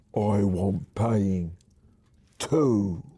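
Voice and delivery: rough, husky, hoarse growling troll voice. Narrator reads a woman grabbing you by the throat, in a husky voice. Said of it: "says in a husky voice".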